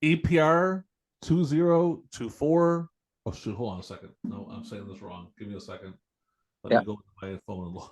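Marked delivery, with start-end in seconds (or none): 0.0-2.9 slow, deliberate, much higher. Telling people how to get tickets, giving a code slow and deliberate. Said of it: "I'll say it kind of slow".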